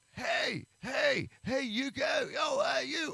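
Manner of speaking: very high, swooping, sing-song carnival barker voice. Describing the booths at a county fair, the speaker does one guy: imitating a county fair booth guy. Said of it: "there's that guy out there like".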